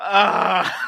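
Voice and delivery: nervous laughter, loud. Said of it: "It was one of those nervous fucking laughs".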